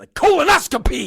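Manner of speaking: punchy, forceful, delighted and joyful. Retelling how the cheerful anesthesiologist said the word: imitating forceful joyful shout. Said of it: "says the word colonoscopy with such force and such joy".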